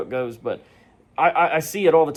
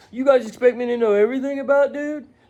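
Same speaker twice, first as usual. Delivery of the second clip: put-on very high, whiny crying voice; 11 semitones higher than usual. Imitating someone dodging the blame: mock crying complaint. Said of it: "now he's crying like".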